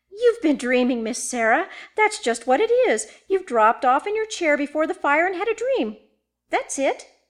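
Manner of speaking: bright, cheery, determined, resolute tone. Narrator reading a woman turning to the narrator to answer, cheery and resolute. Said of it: "she said with a cheery, resolute air".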